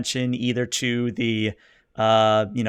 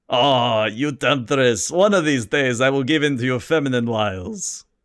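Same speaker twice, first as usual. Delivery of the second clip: put-on happy, cheerful Slavic-accented delivery. A man answers a woman talking up her offer: joyful Slavic accent. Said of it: "he speaks in a very joyful Slavic accent".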